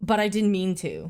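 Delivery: ordinary delivery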